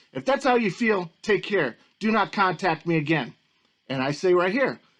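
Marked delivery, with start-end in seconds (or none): none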